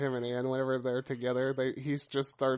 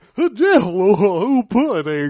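animated, "jello" stretched out with wide pitch swing; 7 semitones higher, 14 dB louder than usual. Showing how another speaker does a celebrity voice: Bill Cosby impression. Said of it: "This is Andy's Cosby".

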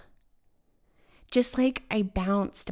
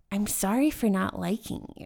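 ordinary delivery

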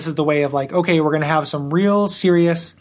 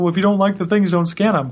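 put-on dopey, dumb-sounding, thick-headed voice; 3 semitones higher than usual. Quoting people who defend the game: imitating people in a dumb voice. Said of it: "the dumb voice".

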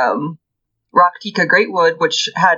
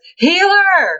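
loud, very high put-on shout; 14 semitones higher than usual. Retelling a fan who shouted an answer at an event: imitating a loud shout. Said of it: "one guy really loudly shouts".

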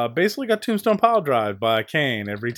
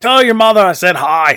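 terrible put-on Scottish or Irish accent, very loud; 7 semitones higher, 12 dB louder than usual. Quoting a funny line from someone, terrible Scottish or Irish accent. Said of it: "That's a terrible Scottish or Irish accent".

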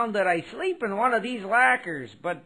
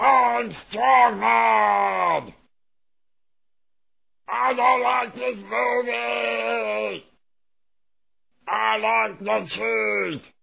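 put-on garbled, barely intelligible dumb brute voice; 4 dB louder than usual. Describing a dumb muscle character from a movie, garbled dumb brute voice. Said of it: "he basically talks like this".

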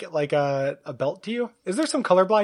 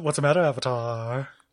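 low, sneering, taunting demon voice; 6 semitones lower than usual. Joking back at another speaker: Guardian voice. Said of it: "Is that your Richard Garriott voice?".

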